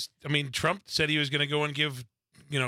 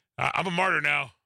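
fake Southern American accent. Voicing another person's words, put-on Southern accent. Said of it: "I don't know why I'm giving him a Southern accent".

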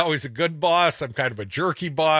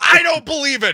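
high-pitched, loud cry full of disbelief. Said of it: "there's people right now going".

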